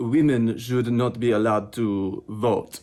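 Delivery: put-on French accent. Voicing a mime's opinion after telling the audience to take a look, French accent. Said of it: "(FRENCH ACCENT)".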